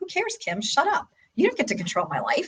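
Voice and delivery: high, soft, dismissive brush-off.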